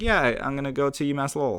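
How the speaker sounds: sleepy, drowsy, barely awake voice. Retelling his own reply to a visitor at the door: imitating a half-asleep reply. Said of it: "half asleep".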